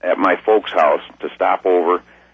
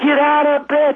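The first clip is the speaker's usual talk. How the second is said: very high, piercing holler at full lungs. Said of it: "hollering to the top of my lungs".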